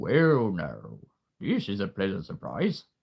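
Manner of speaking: put-on, very deep, low snake voice. Voicing a snake character, very deep voice. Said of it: "imagine me doing a very deep voice".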